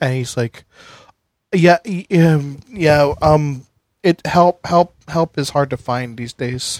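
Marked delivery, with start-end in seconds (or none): 1.5-6.8 dazed, flustered stammering. Voicing a glazed-eyed priest looking around his wrecked house: dazed stammering priest. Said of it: "he looks around like he's seeing it for the first time".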